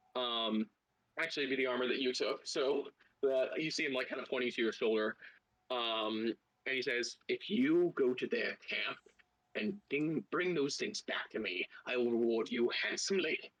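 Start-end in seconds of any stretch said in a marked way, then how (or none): 7.3-13.4 surprisingly deep little gnome voice. A game narrator voices a two-foot-tall gnome speaking to the player: oddly deep gnome voice. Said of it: "Oddly deep voice".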